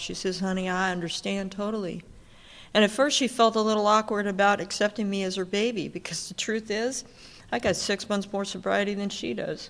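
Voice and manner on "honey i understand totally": put-on southern Texas drawl. Quoting the woman asked about sponsorship, the speaker uses a southern texas drawl. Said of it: "in her southern little Texas drawl".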